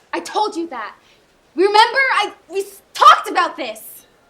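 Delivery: high, full-volume, very loud shouting. Speaking to Dad, who then asks why he is being shouted at; shouting. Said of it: "Why are you shouting at me?".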